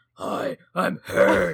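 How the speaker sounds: acted raspy heroic voice. Joking about a masked character disguising his voice: Batman rasp. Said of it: "does the Batman rasp".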